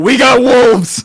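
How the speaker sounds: very loud, high in-character shout. Warning the group in character that wolves are coming: shouting in character. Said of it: "I wanna shout".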